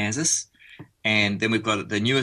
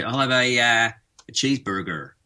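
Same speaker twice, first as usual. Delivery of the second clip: slow American accent, r sounded in cheeseburger. Explaining how to order a cheeseburger at McDonald's, putting the R in. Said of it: "You've got to put that R".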